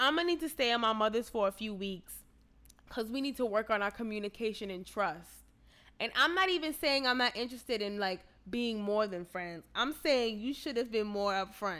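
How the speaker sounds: ordinary delivery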